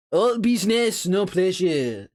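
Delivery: horribly bad French accent. Reading a game boss's lines aloud in a horrible French accent.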